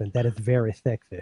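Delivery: heavy lisp on every s sound. Joking about a second mention of velvet: Ladies' Man voice with a lisp. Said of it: "I should speak like the ladies' man now with a lisp".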